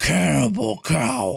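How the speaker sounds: put-on low, creaky evil villain voice. Asked to say something in an evil voice, in a put-on evil voice. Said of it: "in an evil voice".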